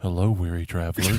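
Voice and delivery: eerie, hushed half-whisper. Picturing an old man at a buffet greeting a passerby: imagined half-whisper. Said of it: "he's gonna whisper something like".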